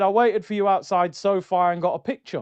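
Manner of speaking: ordinary delivery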